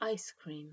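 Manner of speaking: ice cream with stress on ice. Comparing British and American stress in ice cream: stress on ice. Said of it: "Americans stress the first".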